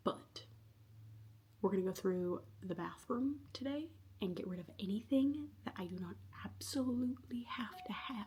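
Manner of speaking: very quiet, soft whispered talk, barely audible. Speaker sorting through the bathroom while someone nearby is working, whispering. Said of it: "I'm whispering because David is working".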